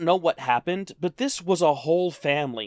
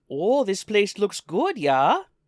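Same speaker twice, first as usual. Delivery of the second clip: put-on Minnesotan accent, casual; 3 semitones higher than usual. Retelling a diner seated behind them, in a minnesota accent. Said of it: "we had done the Minnesota accent before".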